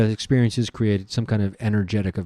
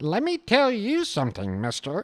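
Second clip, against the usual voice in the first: very high, swooping, sassy character voice; 12 semitones higher than usual. Switching between made-up science characters, now the sassy scientist voice. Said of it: "Is this the sassy scientist coming in?".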